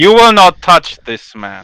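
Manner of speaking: very strong, emphatic delivery. In a scene, the speaker warns someone off, speaking very strongly. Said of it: "speak very strongly".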